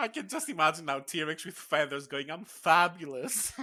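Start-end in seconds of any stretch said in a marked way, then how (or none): 2.3-3.5 put-on cartoon voice, much higher pitch. Imagining a feathered T-Rex talking: Edna from The Incredibles voice. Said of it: "With the same voice as what's her face".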